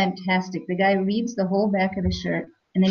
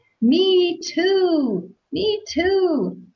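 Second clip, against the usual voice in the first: put-on very high, slow, drawn-out holler; 10 semitones higher than usual. Speaker recounting a man calling out over a crowd, retelling a shout. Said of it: "he shouts over the crowd".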